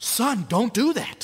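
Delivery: slow, passionate, heartfelt fatherly scolding tone. Acting out a father correcting his son, imitating a father correcting with passion. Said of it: "But if there's passion".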